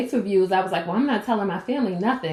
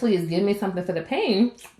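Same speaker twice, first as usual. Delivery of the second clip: usual speaking voice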